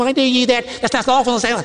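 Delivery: grating, high, squeaky, irritating little voice. The speaker acts out an onlooker running up to challenge him, in a high, squeaky, irritating voice. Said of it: "in probably a very high, squeaky, irritating voice".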